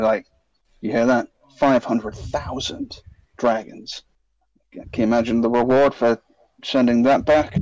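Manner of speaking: hushed conspiratorial tone. Player's character turns away from a companion to speak privately, in a lowered voice. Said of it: "and lower his voice".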